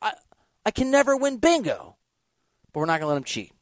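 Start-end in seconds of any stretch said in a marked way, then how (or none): 0.0-2.0 put-on high, swooping, angry child voice. Retelling what a young son says after losing at bingo: imitating an angry child. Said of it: "my son gets mad 'cause he's like".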